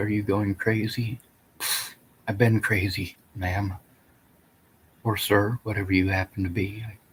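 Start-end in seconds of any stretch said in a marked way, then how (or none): none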